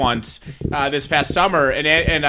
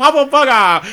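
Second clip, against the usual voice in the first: loud, heavy, thick put-on Japanese accent; 8 semitones higher, 6 dB louder than usual. Speaker retells a man answering the manager; stereotypical thick Japanese accent. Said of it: "the most stereotypical thick Japanese accent".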